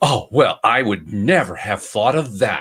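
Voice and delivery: thick sarcasm with mock surprise. Retelling someone's reply to the advice to try Googling: imitating a sarcastic reply. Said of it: "she was just so sarcastic".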